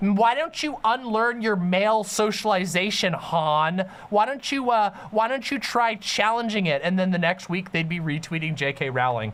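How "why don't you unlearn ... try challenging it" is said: high, preachy, lecturing scold, one word drawn out. Imitating how critics' video would go: mocking imitation of woke scolds. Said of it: "they would say".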